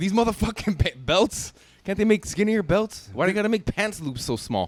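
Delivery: mock frustrated ranting. Acting out struggling with belt loops while already frustrated: imitating a frustrated rant. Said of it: "you're already frustrated".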